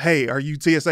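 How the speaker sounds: ordinary talk, nothing marked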